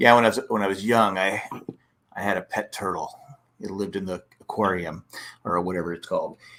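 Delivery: low, put-on, dry, expressionless deadpan delivery. Retelling a comedian's pet turtle bit: imitating a deadpan comedian. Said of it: "he's deadpan".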